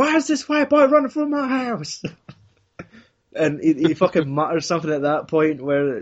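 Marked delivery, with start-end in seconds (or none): 0.0-2.0 very high-pitched, shrill woman's shout. Retelling a story, quoting the woman shouting from her house: imitating a woman shouting. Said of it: "you just hear the fucking woman shouting".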